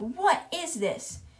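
yelling, pitched high. Retelling a story where chalk writes a name, imitating Trunchbull yelling. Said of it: "Trunchbull is yelling".

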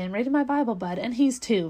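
usual speaking voice

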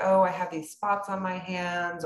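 plain

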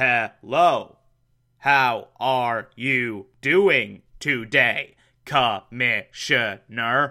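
incredibly robotic voice. Describing a typewriter that speaks to the commissioner, robotic Bruce Wayne voice. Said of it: "it sounds incredibly robotic".

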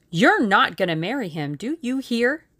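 bossy, dictatorial, domineering tone. Reading a story, he suddenly breaks a silence with her: dictatorial. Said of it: "he said dictatorially".

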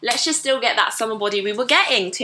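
ordinary talk

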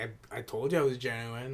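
mock sarcastic tone. Retelling what a contestant said after the judges: imitating a sarcastic tone. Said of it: "she was being, like, sarcastic".

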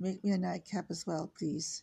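ordinary delivery

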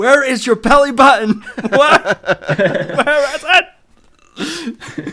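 shrill, very loud, very slow, drawn-out yelling. Imagining someone watching the movie, imitating Paul yelling at the screen. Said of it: "I can just imagine Paul just yelling at the screen".

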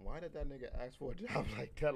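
baffled, puzzled, confused tone. Acting out what workers would think of the question: imitating a puzzled worker. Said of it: "most people be like".

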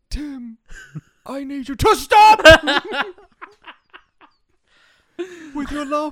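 overwrought, melodramatic pleading like an actor's big scene.

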